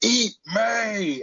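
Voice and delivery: very high yell, "me" drawn out. Retelling a movie scene of yelling at the roach: imitating Tommy Lee Jones yelling. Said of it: "when he's yelling at the, at the roach".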